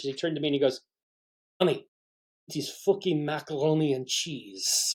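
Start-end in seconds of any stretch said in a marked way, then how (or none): 1.6-4.9 slow, drawn-out, put-on French chef accent. Retelling what the chef said to his young assistant, imitating a French accent. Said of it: "his voice French".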